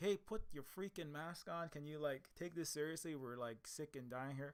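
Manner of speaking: normal talking voice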